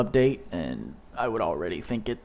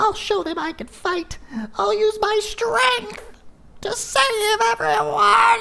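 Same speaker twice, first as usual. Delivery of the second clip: drawn-out, slow, very high, squeaky demonic voice; 8 dB louder than usual. Reading game dialogue aloud since there are no English voice actors, in a demonic Elmo voice. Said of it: "that's getting a little like demonic Elmo".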